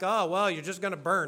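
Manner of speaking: plain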